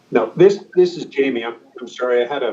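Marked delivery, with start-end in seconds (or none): 0.1-1.4 talking through a mouthful of food. Starting to answer a question, talking with mouth full. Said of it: "I had a bite of my dinner in my mouth".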